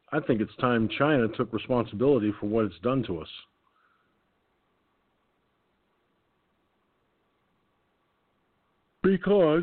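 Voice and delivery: talking through a yawn. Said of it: "sorry for yawning".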